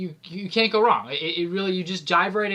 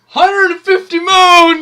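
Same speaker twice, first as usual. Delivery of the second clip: yelling, much higher and louder; 11 semitones higher, 14 dB louder than usual. Calling out a game count while another speaker says not to yell: yelling. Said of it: "need to yell, [name]".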